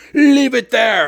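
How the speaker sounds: curt, high-pitched, held-back half-shout. Retelling a store clerk who yells from behind the counter: imitating a clerk yelling. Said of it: "He's yelling at me".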